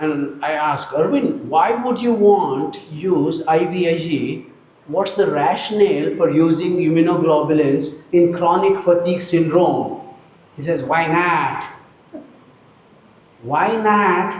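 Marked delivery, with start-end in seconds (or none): 10.8-14.3 slow, unhurried, put-on American accent. Retelling Arvind's reply to a question, imitating Arvind's American accent. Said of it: "American accent".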